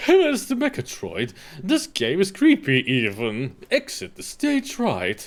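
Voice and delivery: slow, swooping, drawn-out classic cartoon lion voice. Quoting a cartoon catchphrase about the game in the Snagglepuss voice. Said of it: "if you're gonna quote Snagglepuss, you better do the Snagglepuss voice".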